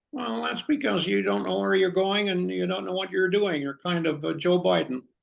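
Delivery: high, creaky, raspy diva puppet voice. Answering a complaint about a long wait, in Miss Piggy voice. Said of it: "I'll do Miss Piggy".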